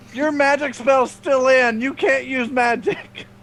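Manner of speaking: high yell in character voice. Yelling out at the table mid-game, objecting to a magic card: yelling out in character. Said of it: "I'm gonna yell out at this point".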